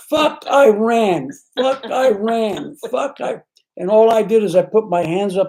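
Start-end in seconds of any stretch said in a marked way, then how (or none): 0.1-3.4 put-on men's screaming, higher. Retelling how men in a passing car yelled: imitating men screaming. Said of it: "screaming at the top of their lungs".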